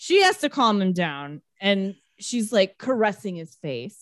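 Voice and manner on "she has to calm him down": plain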